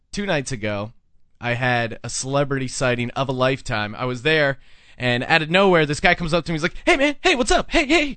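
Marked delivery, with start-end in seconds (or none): 6.8-8.1 very high-pitched voice, full of energy. Retelling a celebrity walking up and greeting: imitating Kato Kaelin, high energy. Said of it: "really high energy".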